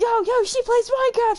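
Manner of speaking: put-on high, loud, hyped kid voice.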